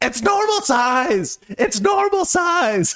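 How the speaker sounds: shrill, very high screaming. Actor retelling a scene idea, yelling at the others in the show, retelling a scream. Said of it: "I just start screaming at them".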